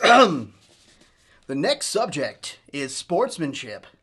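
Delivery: loud, very slow, swooping, pushed radio announcer voice. Introducing the next subject on air, in a radio announcer voice. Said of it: "Was that a good radio voice?".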